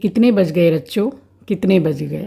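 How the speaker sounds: plain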